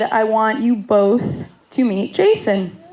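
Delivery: ordinary delivery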